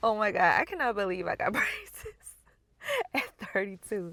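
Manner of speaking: giggling, laughing through words, swooping pitch. Reacting to getting braces, laughing while talking. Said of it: "I don't know why I'm laughing".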